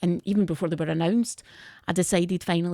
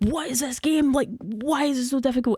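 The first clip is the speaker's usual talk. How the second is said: high, exasperated, frustrated screaming and shouting; 6 semitones higher than usual. Recalling a first playthrough of a hard game, retelling own screaming and shouting. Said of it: "I'm screaming, shouting".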